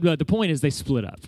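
ordinary delivery

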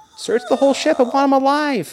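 put-on very high little girl voice, loud. Describing the unlooped scenes, doing a David Prowse little girl voice. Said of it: "a little girl voice".

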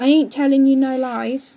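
whiny voice. Narrator reads Jim answering the man, in a whiny voice. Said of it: "He spoke in a whiny voice".

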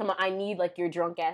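plain

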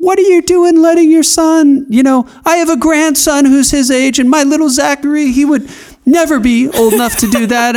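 very high, scolding yell and rant. Retelling a neighbor lady's complaint about the son mowing lawns: imitating a neighbor yelling. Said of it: "starts, like, yelling at me".

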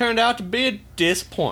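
light Louisiana Cajun accent. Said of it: "You sound more Louisianan than Alabama".

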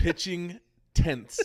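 careful, stretched-out emphasis. Repeating a phrase from a pastor's video, careful not to slip: saying it slowly. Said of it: "I have to say it slow".

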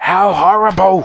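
piercing high-pitched screech. Reading a story aloud, the Queen reacts to the view screen, screeching. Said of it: "screeched the Queen".

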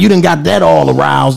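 ordinary talk, nothing marked

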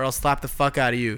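plain

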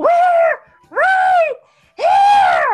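hugely amplified booming shout. Shouting back from the temple with magic: magically amplified shout.

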